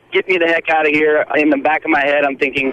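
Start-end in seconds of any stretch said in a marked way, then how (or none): 0.1-1.2 acted, frantic, panicked, freaking-out cry. Retelling being locked in a moving bus compartment: imitating own panicked yell. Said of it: "I am freaking out, like, banging on the bus".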